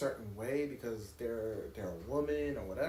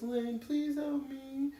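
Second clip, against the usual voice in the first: put-on little babyish voice, very high and slow; 11 semitones higher than usual. Imitating a mother asking for help with her phone: little baby voice. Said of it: "Mom was doing the little baby voice".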